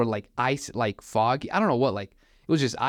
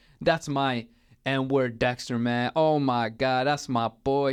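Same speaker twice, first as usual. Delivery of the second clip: put-on, drawn-out speech through obnoxious laughter. Retelling what a man with a gun said: imitating someone laughing obnoxiously while talking. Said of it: "he just started laughing, like, I, ab-, obnoxiously".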